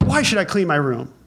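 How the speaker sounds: put-on defiant, openly rebellious tone. Answering dad's order to clean your room, in a defiant, rebellious tone. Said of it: "that was done with a tone of rebellion".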